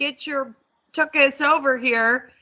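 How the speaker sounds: firm, no-nonsense, stern delivery. Showing how the dad would call his dog over, mock-stern call to a dog. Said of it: "and be real stern".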